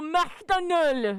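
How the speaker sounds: imitated French accent. Mimicking how a french person pronounces a brand name, in a french accent. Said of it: "you ask a French person to say fucking McDonald's, and they go".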